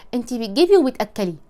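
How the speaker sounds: normal talking voice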